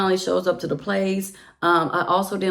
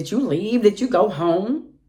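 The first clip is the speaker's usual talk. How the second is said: mock pushy, aggressive, confrontational, demanding tone; 3 dB louder than usual. Retelling how he questioned her on the phone: imitating an aggressive tone. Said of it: "your aggressive tone".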